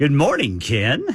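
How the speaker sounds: put-on daring, challenging tone. Retelling a coworker's greeting in the newsroom, imitating a daring greeting. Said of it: "daring me to say something".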